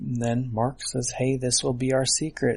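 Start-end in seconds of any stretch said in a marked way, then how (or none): none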